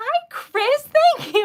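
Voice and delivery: shrill, very high, loud, drawn-out yell. Thanking a new member for joining, yelling. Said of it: "Oh my God, I'm yelling. Sorry".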